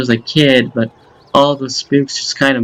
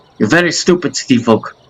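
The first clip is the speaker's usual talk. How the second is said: mock hobgoblin voice with fake Russian accent. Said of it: "I don't know why I made him Russian".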